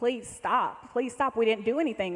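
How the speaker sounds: put-on screamed pleading. Speaker recounts being twelve in the back seat while guns were pointed at their father; retelling own screaming plea. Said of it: "I'm just screaming".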